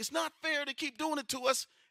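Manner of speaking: put-on, shrill, very high screaming yell. Retelling how an old woman sat yelling and screaming, imitating someone yelling. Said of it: "sitting there yelling and screaming like".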